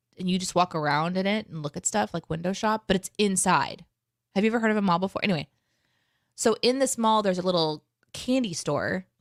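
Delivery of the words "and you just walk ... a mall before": plain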